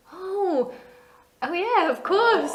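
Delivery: high, slow, sheepish voice.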